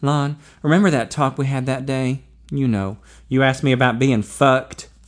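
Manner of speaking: plain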